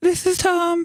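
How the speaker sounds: fake voice, not his own. A guest on the show introduces himself to the folks, in a put-on voice. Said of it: "That's not normally how I talk".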